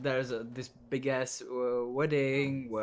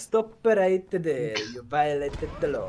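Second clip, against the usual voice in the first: speaking with an Italian accent; 3 semitones higher, 8 dB louder than usual. Imagining the game's NPCs with another accent, doing a guard: Oblivion guard, Italian accent. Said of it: "Imagine if uh, Oblivion N P Cs had uh, Italian accent".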